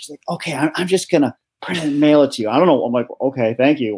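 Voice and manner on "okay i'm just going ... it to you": acted-out whisper. Retelling a courthouse worker whispering into her phone, imitating someone whispering. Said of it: "she's like whispering in her phone".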